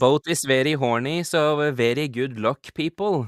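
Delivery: exaggerated Norwegian accent. As a boat captain making an announcement to the people aboard, stereotypical norwegian accent. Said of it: "reaching into that stereotypical Norwegian".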